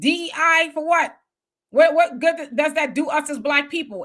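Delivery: normal talking voice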